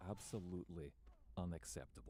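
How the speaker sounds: hushed, low, under-the-breath muttering. Voicing a character who mutters while the speaker carries on: muttering under his breath. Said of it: "just under his breath".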